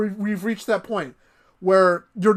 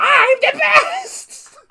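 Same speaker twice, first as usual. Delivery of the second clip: put-on very high, loud chain-smoker kid voice; 7 dB louder than usual. Imitating a character's line: Toad voice. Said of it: "sounding like a five-year-old chain smoker".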